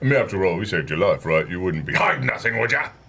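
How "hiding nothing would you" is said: yelling, much higher pitched. Playing a character in a tabletop game, pressing a frail man they saved; yelling.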